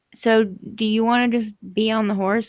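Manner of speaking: ordinary delivery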